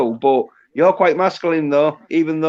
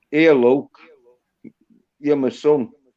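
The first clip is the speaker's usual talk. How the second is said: put-on Yorkshire accent. Retelling what he said, imitating a yorkshire accent. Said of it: "he had the Yorkshire accent where he'd been like".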